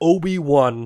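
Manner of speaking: mock raw, loud shout. Retelling a scene where a fallen character is left shouting: imitating someone shouting. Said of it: "just shouting".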